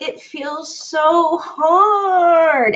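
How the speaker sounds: very slow, high whiny voice, hard and stretched. Voicing the feeling that it's so hard, in a whiny voice. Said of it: "you do have to say it with a whiny voice".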